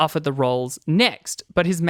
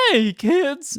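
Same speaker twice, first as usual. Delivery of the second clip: goofy, pitched-up, old-school cartoon voice; 9 semitones higher than usual. Describing an old-school comic's impressions, the speaker does one in a silly cartoon voice. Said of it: "like a real silly cartoon".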